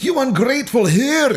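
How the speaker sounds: put-on Scottish accent, very high, insulting. Repeating how she turns scottish at the end of a line, scottish accent. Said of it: "insultingly Scottish at the end of it".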